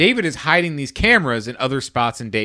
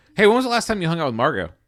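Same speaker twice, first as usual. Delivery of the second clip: probing, cop-like interrogating tone; 3 semitones higher than usual. Acting out David questioning Peter, sounding like a cop. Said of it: "does he sound like a cop".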